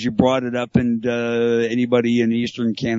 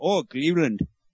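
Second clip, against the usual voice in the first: high-pitched mock Indian accent. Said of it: "was trying to do the guy from Short Circuit".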